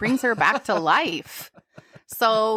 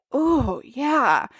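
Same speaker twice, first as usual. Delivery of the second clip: throaty, guttural, visceral groan. Retelling how a character reacts to a compliment: imitating a guttural moan. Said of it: "guttural, like".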